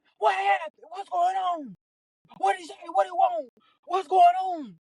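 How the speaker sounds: put-on very high, frantic yelling. Telling about a phone call on speaker, imitating her mama yelling questions. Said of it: "She just yelling".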